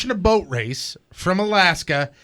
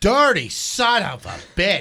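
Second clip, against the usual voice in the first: very slow, every word stretched and dragged out. Quoting the woman from the video: imitating the Alaska woman's voice. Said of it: "she goes".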